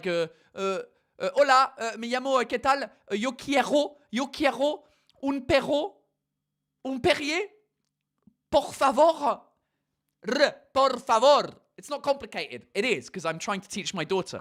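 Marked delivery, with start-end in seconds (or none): 0.0-11.5 put-on French accent speaking very slow Spanish. Mocking how french people speak spanish, imitating french people speaking spanish. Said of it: "French people trying to speak Spanish are like".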